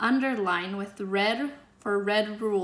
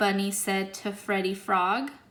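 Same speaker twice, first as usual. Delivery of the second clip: plain reading voice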